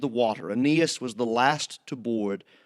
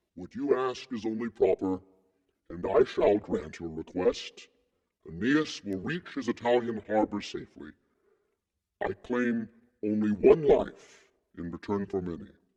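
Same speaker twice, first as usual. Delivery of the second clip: booming deep divine voice; 2 semitones lower, 3 dB quieter than usual. Narrator reads Neptune's answer to a plea for safe passage, deep rolling Neptune voice. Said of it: "In his deep, rolling voice".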